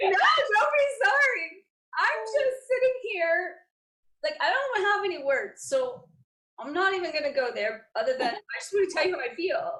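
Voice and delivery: high, swooping voice crying through joyful tears. Responding to the other speaker's words, crying tears of joy. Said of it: "why I'm crying. It's tears of joy".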